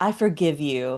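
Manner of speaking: acted-out, smug, self-satisfied, oozing smugness. Retelling a scene where Jamie forgives Lord Grey: imitating smug Jamie. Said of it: "He's so smug. He's like".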